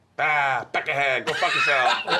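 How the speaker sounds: Boston-style delivery. Asked about Boston while trading accents, the speaker demonstrates a Boston accent. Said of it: "What about Boston?".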